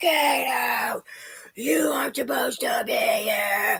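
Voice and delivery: high, slow, banshee-like scream, drawn-out, acted. Retelling being screamed at while dropping gifts at the door: imitating Kenny screaming. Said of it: "screamed like a banshee in my face".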